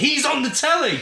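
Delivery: very high, shrill, loud, thrilled excited shout. Retelling how a parent yelled out from the front room: imitating someone yelling excitedly. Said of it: "just yelled out in the middle of the front room".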